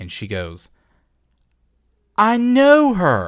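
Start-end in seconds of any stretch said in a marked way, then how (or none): 2.2-3.3 very high pitch, raised just short of yelling. Retelling what she said while looking down at her phone: imitating a high-pitched elevated voice. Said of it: "but an elevated voice".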